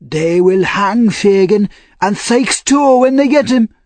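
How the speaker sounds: scared, frightened voice, very high and rising. After hearing of a capture, one speaker warns another, in a frightened voice. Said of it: "said Toby in a frightened voice".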